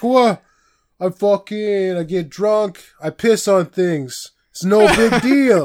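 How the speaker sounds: put-on slow, unhurried Italian-guy accent. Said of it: "I turned him into, like, an Italian guy there".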